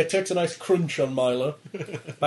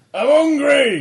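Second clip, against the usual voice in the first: shrill, very high, loud little monster voice; 9 semitones higher, 7 dB louder than usual. Voicing a mimic whose little mouth appears: mimic monster voice. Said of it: "a little mouth appears and goes".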